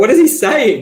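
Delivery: high, loud, slow, baffled tone.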